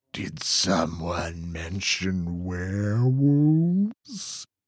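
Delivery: growling whisper. Narrating a story, a werewolf friend whispers in a boy's ear, growling whisper. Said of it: "a growling voice whispers".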